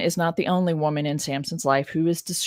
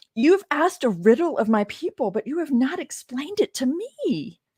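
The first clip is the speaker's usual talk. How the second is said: high, swooping, whiny voice; 9 semitones higher than usual. Reading Samson's wife's words to him, in a whiny voice. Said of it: "I'm not good at this kind of whiny voice".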